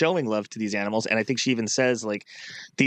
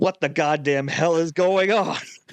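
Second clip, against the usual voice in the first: mock grumpy old man outburst, higher and louder; 6 semitones higher, 4 dB louder than usual. Retelling a character's reaction to getting oat bran: imitating an angry old guy. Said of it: "angry old guy thing".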